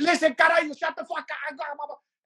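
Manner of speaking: very high-pitched loud yell. Retelling yelling over noisy people to be heard: imitating own yelling. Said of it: "I'm so used to yelling over these".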